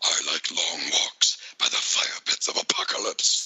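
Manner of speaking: breathy, whispered character voice. Asked by another speaker to do the voice, the speaker obliges: Darkseid voice. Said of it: "Come on, do the voice".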